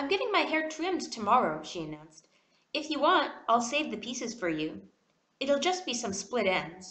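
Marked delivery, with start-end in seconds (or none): none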